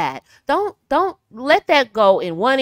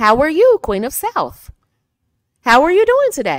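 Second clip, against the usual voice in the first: upward lilt, pitch rising on South and today; 5 semitones higher, 3 dB louder than usual. Demonstrating how to speak with sentences going up at the end, pitch rising. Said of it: "Raise the sentence at the end".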